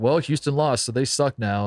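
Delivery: ordinary talk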